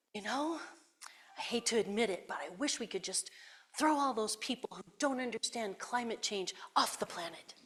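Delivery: secretive, confiding, conspiratorial tone. Retelling what a woman at a protest leaned over and said, retelling a conspiratorial voice. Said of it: "in this conspiratorial voice and said".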